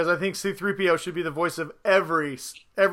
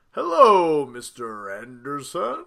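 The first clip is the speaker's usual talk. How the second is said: pitched low, each word swooping; 4 semitones lower than usual. Naming voices they would like to hear, doing Agent Smith voice. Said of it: "I also need some Agent, Agent, uh, Smith".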